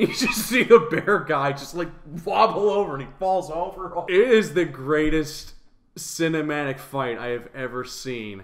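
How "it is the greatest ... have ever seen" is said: dry, sarcastic, ironic overpraising tone. Talking about a bad movie's fight scene: sarcastic. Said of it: "yes I am being sarcastic".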